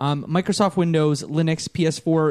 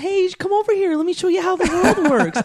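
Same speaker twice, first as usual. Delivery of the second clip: very high, super pleasant voice; 3 dB louder than usual. Acting out a game character's friendly greeting: super pleasant Flowey voice. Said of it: "Super pleasant".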